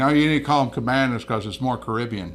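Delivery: normal talking voice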